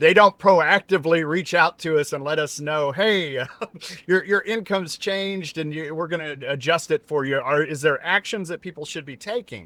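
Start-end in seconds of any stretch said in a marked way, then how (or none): 2.9-7.4 put-on facetious, tongue-in-cheek sarcastic tone. Imitating the agencies that don't proactively reach out: facetious mock quote. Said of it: "I'm being facetious here".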